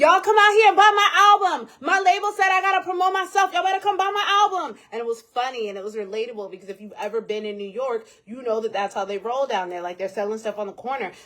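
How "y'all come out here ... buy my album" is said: very loud, very high hawker-style hollering. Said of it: "she made TikToks and was like".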